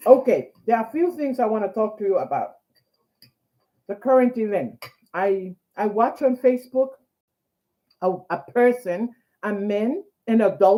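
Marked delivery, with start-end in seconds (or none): 0.1-4.8 fast talking through a mouthful of food. Speaker eating on camera while starting to talk to viewers, mouth full. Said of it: "eating with food in the mouth".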